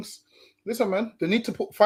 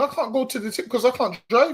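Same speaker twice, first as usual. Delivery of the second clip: mock tearful crying, said through tears; 3 semitones higher than usual. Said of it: "There's a woman crying saying".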